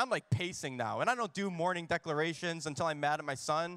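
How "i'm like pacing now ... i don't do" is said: ordinary delivery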